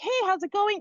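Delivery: very high, bright, eager, excited voice. Showing how you greet someone on a follow-up call while walking around, excited, higher-pitched voice. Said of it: "your voice gets higher pitched".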